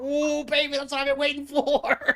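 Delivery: very high-pitched, hyped-up, excited exclamation. Describing what Charlie said when he went Super Saiyan: imitating Charlie's reaction. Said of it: "He's like".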